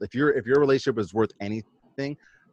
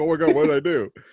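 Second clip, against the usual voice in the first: high, tearful voice, sobbing through the words; 5 semitones higher than usual. Acting out a punched husband's reaction: mock crying. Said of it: "And he's, like, crying".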